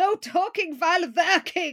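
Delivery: put-on Middle European accent. Retelling a scene where the boss scolds the workers, in a Middle European accent. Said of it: "has a sort of Middle European accent and says".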